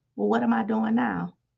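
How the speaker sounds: put-on whisper. Retelling hearing a whisper in the bathroom: retelling a whisper. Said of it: "the whisper came back and said".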